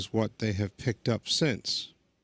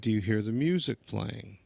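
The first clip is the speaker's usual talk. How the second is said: ordinary delivery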